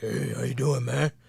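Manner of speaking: relaxed, easy, nice deep voice. Retelling greeting a guy named Cliff, imitating Cliff's deep voice. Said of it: "nice deep voice".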